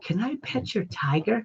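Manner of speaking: very soft, whispered, cute little voice. Retelling someone asking to pet their tiger, in the cutest voice. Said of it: "in the cutest voice".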